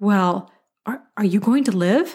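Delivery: put-on, exaggerated, very concerned voice. Retelling her sarcastic question after she examined the speaker's arms and legs, imitating a super concerned voice. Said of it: "asked me in a super concerned voice".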